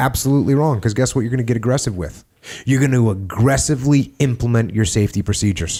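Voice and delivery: ordinary delivery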